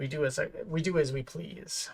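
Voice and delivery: deep, low, soft, menacing rumbling voice. Describing a voice to others and then doing it, low, rumbling voice. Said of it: "a low tone, um, rumbling voice".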